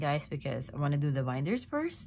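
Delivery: plain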